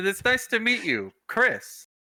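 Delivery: failed whisper, spoken in ordinary voice. Acting out a person leaning in uncomfortably close to greet Chris: too loud. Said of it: "Keep your voice down".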